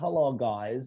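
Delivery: put-on slight Russian accent. Describing the accent one guy did, Kumail Nanjiani's Russian-sounding accent. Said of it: "it's like almost Russian what he did".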